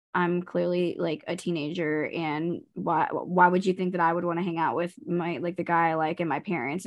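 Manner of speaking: usual speaking voice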